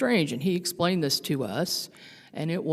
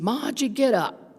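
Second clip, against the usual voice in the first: put-on Brooklyn Italian accent, pitched up; 8 semitones higher, 3 dB louder than usual. The speaker retells hearing his voice by the bedroom door, Brooklyn Italian accent. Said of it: "in his Brooklyn Italian accent".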